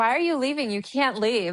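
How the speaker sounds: put-on, loud, worked-up, overprotective yelling. Retelling shouting at a book character who is leaving: imitating own past yelling. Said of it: "Who are you yelling at?".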